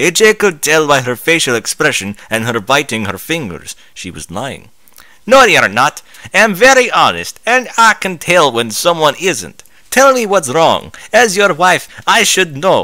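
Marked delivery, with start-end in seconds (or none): 5.3-12.8 put-on Southern American accent layered over a Russian accent. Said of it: "an average farm woman sat. ... how am I gonna do Southern Russian? ... Sounds like a Russian doing an American accent".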